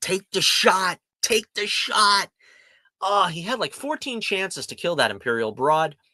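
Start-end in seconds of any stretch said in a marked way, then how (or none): 0.0-2.3 mock high, frustrated screaming. Recounting yelling at a character while watching television: retelling screaming at the tv. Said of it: "I was just screaming at the television".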